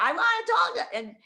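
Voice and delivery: play-acted shrill, very high scream. Retelling a man screaming in the background of a call: imitating someone screaming. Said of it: "him screaming in the background".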